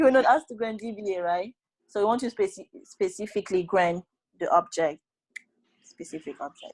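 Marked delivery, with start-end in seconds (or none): 0.0-1.5 high, fast mock scolding yell like cross professor. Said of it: "he would be screaming, uh, shouting at you".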